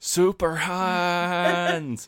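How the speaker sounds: mock very high yell, the word 'hands' drawn out. Retelling a character charging straight at a bunker: imitating someone yelling. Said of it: "he's just yelling".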